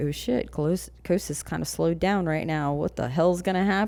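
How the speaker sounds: normal talking voice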